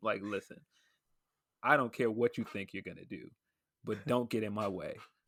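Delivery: put-on menacing tone, very soft and scary. Describing a film scene where a man threatens a teenager, imitating a soft, intimidating threat. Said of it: "like very softly and very intimidating and scarily".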